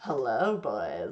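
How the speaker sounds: very deep, very low rasping voice. Showing how the voice sounds today: deeper, raspier voice. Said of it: "My voice is unusually deeper, deeper and raspier today".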